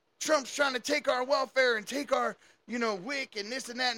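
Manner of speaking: put-on man's yelling. Retelling footage of a man yelling at the camera, imitating his yelling. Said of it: "and he's yelling at the camera".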